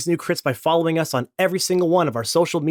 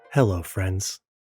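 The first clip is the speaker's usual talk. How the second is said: very deep golf commentator announcer voice; 9 semitones lower, 4 dB quieter than usual. Host recording the show, greeting listeners at the middle break: golf announcer voice. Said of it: "so I'm in the golf announcer mode".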